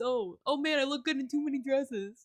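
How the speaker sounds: teasing, slow, mocking humblebrag send-up. Imitating a friend who complains about looking good: mocking a friend's complaining. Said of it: "'cause I'm like".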